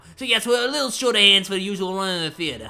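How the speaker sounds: put-on loud character voice with slight Boston accent. Voicing the theater staff member in game dialogue: character voice with a bit of Boston. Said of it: "it's got a bit of a Boston thing going on it now".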